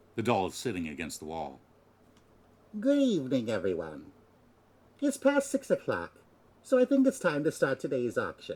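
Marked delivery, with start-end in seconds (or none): 2.8-8.6 high, electronic synthesized voice from a speaker. A voice from a hidden speaker greets everyone to open the auction; electronically synthesized voice. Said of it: "the face of this doll is like an old woman. / It's a French doll, about 50 centimeters tall, and wears a cute-looking dress with aqua blue frills. However, for some reason, the face of this doll is li".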